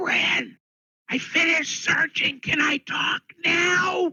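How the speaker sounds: whisper-yelling. Voicing a goblin signing to a companion: whisper-yelling. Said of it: "whisper yelling".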